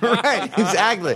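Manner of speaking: laughing while speaking.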